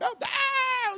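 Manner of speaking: very high shouted "meu Deus".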